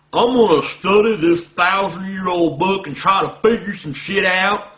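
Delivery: loud put-on rural Southern American accent. Describing someone's intellectual pursuit, quoting them in a redneck voice. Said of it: "I'm doing a redneck voice for Muslims".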